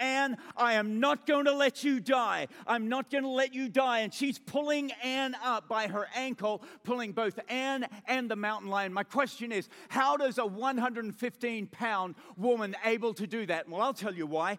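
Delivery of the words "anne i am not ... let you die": frantic, pleading, loud, high desperate yell. Retelling how a friend yelled while pulling her up: retelling a desperate yell. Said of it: "yelling at the top of her lungs".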